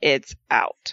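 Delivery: deadpan, very low and dead flat voice. Recounting a wrestling match, quote the remark by imitating Samoa Joe, very deadpan. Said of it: "very deadpanly saying".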